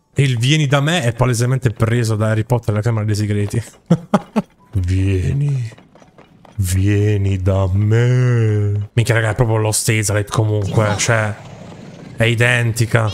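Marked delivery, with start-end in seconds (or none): 4.8-8.9 deep, very slow voice with me stretched out. A speaker repeats words just heard, imitating a deep voice. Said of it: "Che voce profonda".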